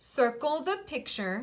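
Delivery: plain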